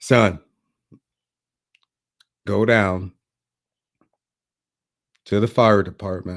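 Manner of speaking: put-on flat, unenthusiastic, indifferent tone. Retelling a neighbor's answer about a job application: imitating an unenthusiastic reply. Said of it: "he wasn't even that enthusiastic".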